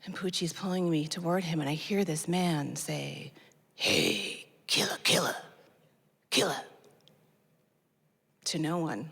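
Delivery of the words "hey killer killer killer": rasping, very hoarse, almost-whispered voice. Retelling a stranger's words on the street: imitating a very hoarse whisper. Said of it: "saying something with a very hoarse whisper".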